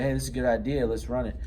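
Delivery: ordinary talk, nothing marked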